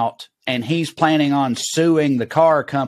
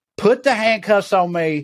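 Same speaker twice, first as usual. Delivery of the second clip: put-on scream, higher; 6 semitones higher than usual. Retelling a hammered man screaming at the police to arrest him: imitating someone screaming. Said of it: "starts screaming at them".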